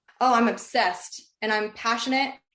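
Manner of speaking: usual speaking voice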